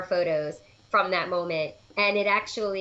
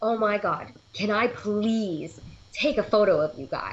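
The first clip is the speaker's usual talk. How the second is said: put-on excited gushing. Retelling how a vendor stopped the group, imitating an excited vendor. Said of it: "stops us just so excited".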